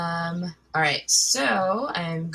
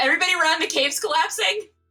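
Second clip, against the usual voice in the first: very high, shrill, alarmed scream; 12 semitones higher, 4 dB louder than usual. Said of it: "the first thing I would like to do is scream".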